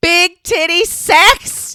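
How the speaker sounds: very loud, very high, shrill yell. Telling a story about repeating a misheard phrase back, retelling a top-volume shout. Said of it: "as loud as my voice would go".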